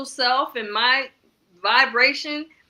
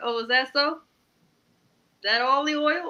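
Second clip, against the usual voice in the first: mock needling, pointed, petty sarcasm; 3 dB quieter than usual. Retelling own reply to a woman's boast: retelling own sarcastic reply. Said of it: "you know I'm sarcastic and petty".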